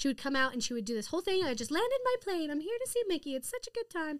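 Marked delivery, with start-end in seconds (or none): 1.4-4.2 high, squeaky little cartoon mouse voice. Recalling a show where Minnie came out as a pilot, in a Minnie Mouse voice. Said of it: "It's a very good Minnie Mouse impression".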